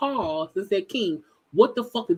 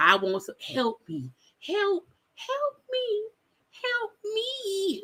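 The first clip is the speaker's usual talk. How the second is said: very high, soft, slow, demure meek voice; 11 semitones higher, 5 dB quieter than usual. Mocking how someone sounded on a live: imitating a calm demure pleading voice. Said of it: "your calm voice, your demure voice".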